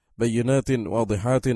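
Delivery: ordinary talk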